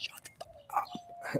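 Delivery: whispered scream with no volume. Retelling what gets said alone in the room: imitating a scream with no volume. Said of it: "so I'll be screaming, but, like, no volume".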